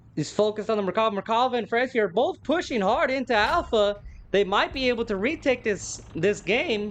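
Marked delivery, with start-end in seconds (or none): 4.4-7.0 voice cracking and giving way mid-line. Commentating on a match as two teams push into Alpha, voice cracking. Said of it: "my voice is cracking".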